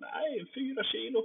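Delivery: broad Skåne dialect, very high-pitched. Quoting a man from the gym answering his question, in a thick Scanian accent. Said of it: "på grov skånska".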